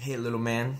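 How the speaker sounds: light southern twang. Quoting an older man who greeted him, slight southern accent. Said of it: "with a little southern accent".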